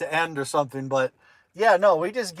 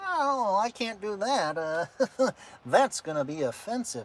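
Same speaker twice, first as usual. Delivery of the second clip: exaggerated uptight put-on voice, high and slow; 5 semitones higher, 6 dB quieter than usual.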